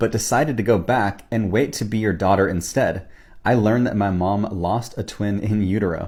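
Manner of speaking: plain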